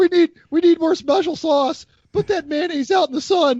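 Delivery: put-on squeaky teen voice, pitched way up. Recalling the fast-food kid on The Simpsons, squeaky Simpsons teenager voice. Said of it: "squeaky voice teenager".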